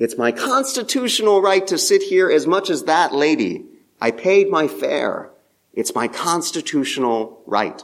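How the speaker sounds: high-pitched, insistent voice. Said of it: "in my high-pitched voice".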